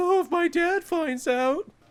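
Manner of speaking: play-acted sobbing, very high pitched, begging tone. Retelling a movie scene where a pathetic character starts crying. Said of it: "and he starts crying".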